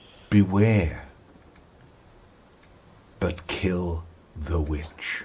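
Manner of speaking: slow, hushed, half-whispered divine voice. Voicing a divine voice on the wind: voice of god half-whispering. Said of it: "the voice of God whispers in your ear".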